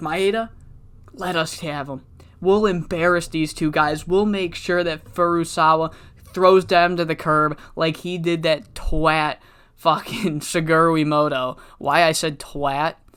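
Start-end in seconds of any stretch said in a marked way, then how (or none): none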